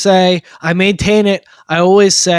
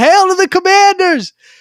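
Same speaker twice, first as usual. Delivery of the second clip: high, loud screamed cheer. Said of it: "He starts screaming".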